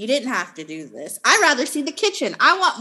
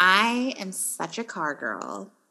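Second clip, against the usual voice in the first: put-on voice, very slow and drawn out; 4 semitones lower, 5 dB quieter than usual. Retelling what someone said about a gray basketball court, Kim voice. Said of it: "let me do my Kim voice".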